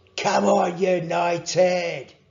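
loud, encouraging, cheering yell. Cheering United on while sitting beside a sleeping friend, yelled. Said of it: "yelled [name]".

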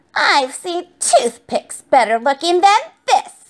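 birdlike, squawking witch voice. Narrator reading a character's line over her broken broomstick, squawking. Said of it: "she squawked".

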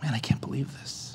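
mock gasp under breath. Sitting at the piano while his daughter plays, retelling an under-breath gasp. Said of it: "under my breath gasped".

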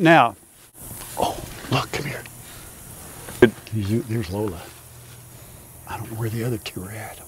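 soft, hushed whisper under the breath. Calling over someone who is filming, whispering. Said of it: "Why am I whispering?".

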